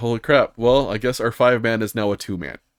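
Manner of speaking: usual speaking voice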